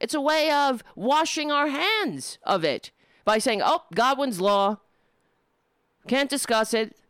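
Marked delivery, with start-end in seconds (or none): none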